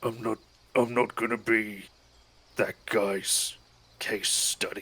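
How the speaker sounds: low, put-out, grumbled muttering. Voicing Henri as he leans over to another player: Henri grumbling. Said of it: "he grumbles and he's like".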